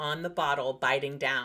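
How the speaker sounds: plain reading voice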